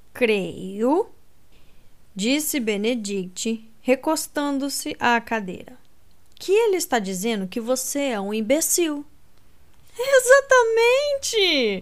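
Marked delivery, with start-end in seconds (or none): 9.9-11.8 shrill, very high-pitched, loud exclamation. Colin responds to Benedict's remark to Anthony, exclaiming. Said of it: "exclamou Colin".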